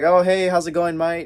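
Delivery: put-on British accent. Retelling meeting Andrew at a photo line: imitating Andrew's British accent. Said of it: "in his British accent".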